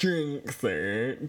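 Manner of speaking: odd put-on voice with wide pitch swoops.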